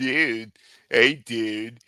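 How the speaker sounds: put-on California surfer dude accent. Asked to do a California accent: California surfer dude accent. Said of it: "give me a California dude".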